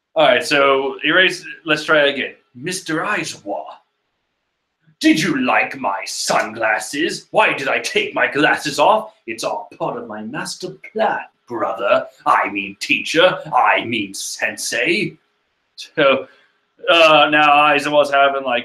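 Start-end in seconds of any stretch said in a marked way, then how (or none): 2.6-15.2 put-on villain voice. Retrying a character's line to his teacher, in a Liquid Snake voice. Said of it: "give Deku the voice of Liquid Snake".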